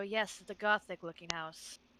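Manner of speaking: callously muttered under breath. A character answering a teddy bear's remark, callous mutter under breath. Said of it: "very callously under her breath go".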